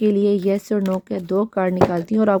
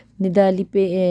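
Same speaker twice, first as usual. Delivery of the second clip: usual speaking voice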